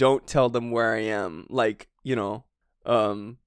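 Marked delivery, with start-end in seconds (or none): none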